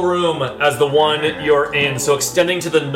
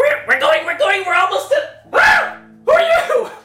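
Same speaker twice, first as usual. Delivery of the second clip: goblin voice, much higher. Narrating a game, a goblin speaks as the door swings open: goblin voice. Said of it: "one of them says in goblin".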